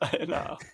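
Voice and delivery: soft, breathy, helpless laughter.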